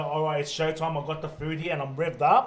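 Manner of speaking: normal talking voice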